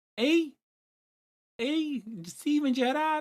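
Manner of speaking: Liverpool accent. Comparing accents from Newcastle down to Manchester, demonstrate a Liverpool accent. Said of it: "and then there's like Liverpool".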